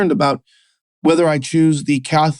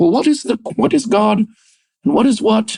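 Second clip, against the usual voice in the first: high, pitched-up cartoon frog puppet voice; 6 semitones higher than usual. Talking about knowing God, mocking how he asks: Jordan Peterson impression. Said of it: "in his Kermit the Frog voice".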